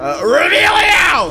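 high, slow shouting.

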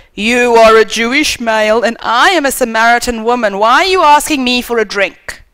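very loud outburst. Speaker retelling what the Samaritan woman said, in a very, very loud voice. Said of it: "in a very, very loud voice said".

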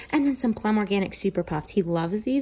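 half-whispered under the breath, soft and hushed. Listing groceries bought for Hugo, hiding them from him, half-whispering. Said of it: "which is why I'm whispering".

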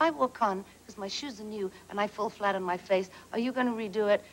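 ordinary talk

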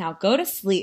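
usual speaking voice

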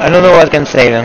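ordinary delivery

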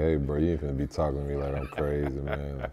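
normal talking voice

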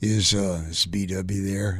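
big, deep, very slow voice. Retelling a surprise early morning phone call: imitating a big deep voice. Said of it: "this big, deep voice says".

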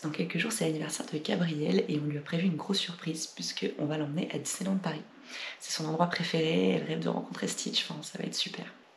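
hushed whisper. Announcing a surprise birthday trip while the birthday girl is in the next room, whispering. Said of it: "Je chuchote parce qu'elle est dans la pièce".

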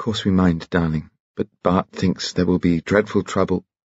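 plain

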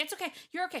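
shrill, high, loud, panicked and frantic. Acting out an owner frantically saying it's okay, mock-frantic, imitating freaking out. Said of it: "she was saying it frantically. Like she was like".

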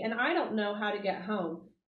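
ordinary delivery

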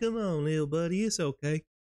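put-on sweet voice for a pet. Mocking a line that sounds like talking to a dog: imitating talking to a dog. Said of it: "sound like he's talking to a dog".

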